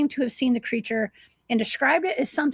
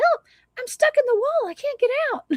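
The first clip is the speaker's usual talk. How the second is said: very high, put-on little boy voice; 13 semitones higher than usual. Retelling how a man knocked on the walls at night: little boy voice. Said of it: "having like a little boy voice".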